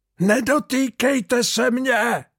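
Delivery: very high, piercing, shrill scream. Narrator reads the ship's carpenter's cry, to the others' astonishment; shrieked. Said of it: "Zaječel lodní tesař".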